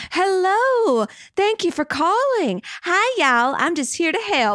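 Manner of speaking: sweet, high Midwestern lady voice, drawn out. Speaker imagines an Adobe phone agent answering a call, nice Midwestern lady voice. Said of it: "some nice Midwestern lady who just like wants to help".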